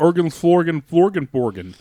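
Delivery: high, loud, put-on Swedish-style nonsense babble. Showing what Swedish sounds like: Swedish Chef voice. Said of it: "Sweden is".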